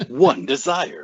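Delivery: loud, slow movie trailer voice. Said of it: "I can help you with the trailer voice".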